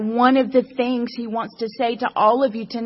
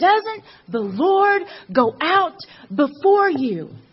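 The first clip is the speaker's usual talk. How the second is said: put-on bold, high, raised-voice shout; 6 semitones higher than usual. Acting out a quoted rallying call before a battle: imitating a shout. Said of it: "She shouted at Barak".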